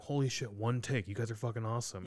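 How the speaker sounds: ordinary talk, nothing marked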